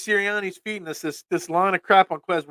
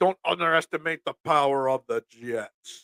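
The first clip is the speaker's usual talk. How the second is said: deep, menacing put-on voice; 3 semitones lower, 4 dB quieter than usual. Talking football, the speaker warns about the Jets in a Darth Vader voice. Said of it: "in my Darth Vader voice".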